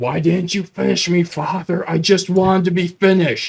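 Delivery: pained yelling in monster voice. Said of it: "just yells".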